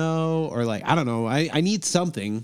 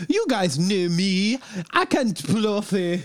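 speaking with Icelandic accent; 5 semitones higher than usual. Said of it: "Is that the [name] Iceland Beeps?".

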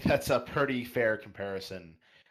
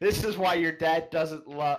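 acted-out, high-pitched screamed jab, let rip; 7 semitones higher, 3 dB louder than usual. Retelling what was screamed last week: retelling own scream. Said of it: "where I screamed".

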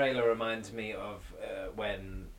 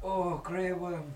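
put-on Scottish accent, higher pitch; 9 semitones higher, 4 dB louder than usual. Watching a show with friends and naming a character: scottish accent. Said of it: "Why are you Scottish?".

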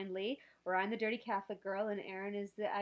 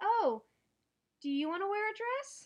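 put-on innocent tone, higher and louder; 12 semitones higher, 5 dB louder than usual. Retelling own reply about wearing a dress: imitating own innocent delivery. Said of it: "really innocently".

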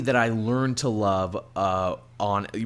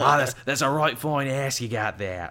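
put-on Australian accent; 2 semitones higher than usual. Quoting a comic character's remark, Constantine with Australian accent. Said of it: "I don't know why I'm making Constantine sound Australian".

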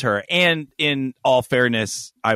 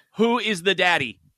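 normal talking voice

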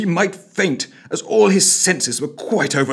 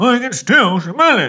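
talking through a bunged-up, pinched nose; 4 semitones higher, 3 dB louder than usual. Narrator reads a character's line, nose still plugged: talking through a bunged-up nose. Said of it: "he intoned through bunged-up nose".

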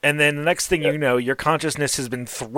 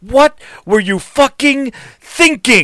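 enraged, furious, very loud, high-pitched roaring yell; 8 semitones higher, 8 dB louder than usual. Voicing an angry devil father who grabs a character: furious yell. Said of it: "and just yells at you".

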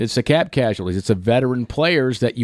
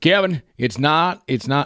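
slow, terrible impersonation, each word drawn out; 3 semitones higher than usual. Recalling a talk about the salary cap, doing a John Butler impersonation. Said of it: "I'm gonna do a John Butler impersonation".

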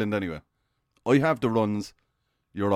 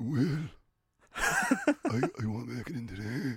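put-on sick voice, quieter; 8 dB quieter than usual. Demonstrating calling in to skip work, using a put-on sick voice. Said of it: "put on the sick voice".

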